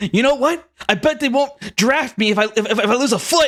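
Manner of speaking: high, whimpering, tearful crying. Voicing the bandit Smitty as the group walks away, crying. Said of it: "All the bandits are like crying".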